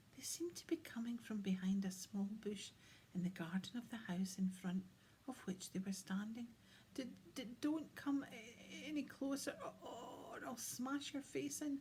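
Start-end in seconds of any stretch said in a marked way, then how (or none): 6.9-11.8 high, snotty, congested, snapped out, stammering the start. Hiding behind a bush, a girl snaps at William in Brenda's snotty, stuffy voice. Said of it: "snapped a snotty, stuffy voice".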